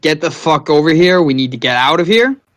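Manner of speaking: loud hollering yell. Calling out to Renza in character to come over: yelling for someone. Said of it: "I'm gonna yell for Renza".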